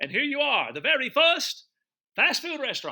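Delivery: put-on very high hollering in an Italian accent. Recounting an energetic older man showing them around the streets, hollering in italian accent. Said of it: "hollered out in his best English with a with his accent of Italian".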